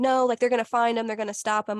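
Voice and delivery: ordinary talk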